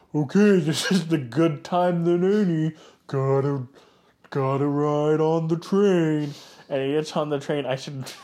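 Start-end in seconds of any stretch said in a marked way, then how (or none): 0.2-6.4 droopy-mouthed cartoon dog voice. Retelling a film character's line before boarding a train: Droopy Dog voice. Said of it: "what Droopy Dog sounds like".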